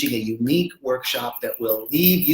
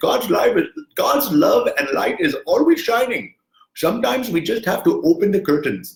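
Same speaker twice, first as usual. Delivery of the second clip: clumsy, high-pitched put-on Indian accent; 6 semitones higher, 3 dB louder than usual. Quoting an Indian mystic in a bad Apu impersonation. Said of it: "a really bad Apu impersonation".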